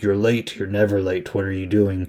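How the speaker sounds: usual speaking voice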